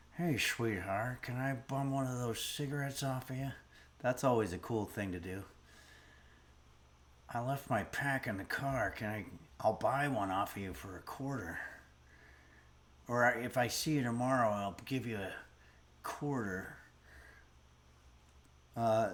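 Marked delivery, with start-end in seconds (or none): 0.2-16.8 put-on old-Hollywood leading-man voice. Bumming a cigarette from a stranger in a Humphrey Bogart impression. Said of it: "I was just doing an impression of Bogart".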